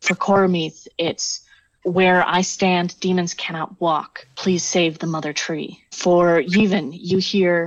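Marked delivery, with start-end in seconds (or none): 1.8-5.8 whispering voice. Voicing a whisper each player hears in their ears: whispering voice. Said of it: "whisper in, uh, in each of your ears".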